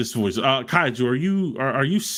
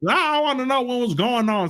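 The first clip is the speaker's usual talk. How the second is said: high, snide, mocking put-on voice; 10 semitones higher than usual. In an argument, throwing the other man's words back at him: mocking imitation of him. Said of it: "I can't even mimic your voice".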